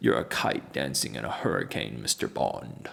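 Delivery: deep put-on voice, dropped low. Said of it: "Should I talk every video with a deep voice?".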